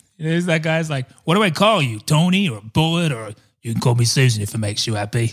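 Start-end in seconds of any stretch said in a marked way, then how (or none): 1.2-5.3 put-on London accent. Showing a co-host a go-to impression: Vinnie Jones impression. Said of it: "my go-to impression for him".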